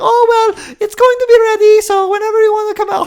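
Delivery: put-on shrill, loud, belted Romanian accent. Retelling what a woman kept saying to the speaker, in a shrill Romanian accent. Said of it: "in her very shrill Romanian accent voice".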